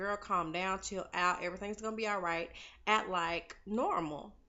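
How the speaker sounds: ordinary talk, nothing marked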